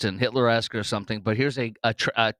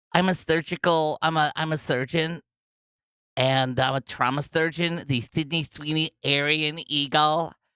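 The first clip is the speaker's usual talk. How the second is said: scornful, derisive, stumbling delivery; 5 semitones higher than usual. Mocking a trauma surgeon from a clip: mocking imitation of the trauma surgeon. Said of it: "she talks like this".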